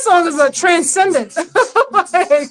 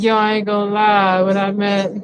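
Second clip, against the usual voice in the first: mock slurred drunken speech; 9 semitones lower, 3 dB quieter than usual. Imitating a drunk speaker's words: imitating slurred drunk speech. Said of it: "His words are slurred".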